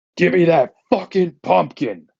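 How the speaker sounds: high-pitched scream. Retelling a wrestling match moment: imitating a wrestler screaming. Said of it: "and then he just screams".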